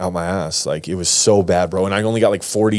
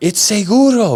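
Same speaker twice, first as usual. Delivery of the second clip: mock screaming woman, much higher; 14 semitones higher, 5 dB louder than usual. Retelling a woman insisting that he had drugs in his intestines: imitating her screaming. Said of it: "She's screaming like".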